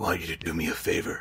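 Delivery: very quiet, hushed whisper. A parent repeats how two kids quote a movie line, doing the movie character's voice. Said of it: "they both do the voice".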